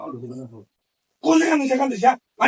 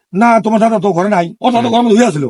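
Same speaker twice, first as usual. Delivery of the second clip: normal talking voice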